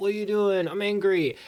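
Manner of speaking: plain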